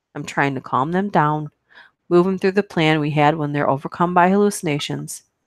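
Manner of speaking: ordinary delivery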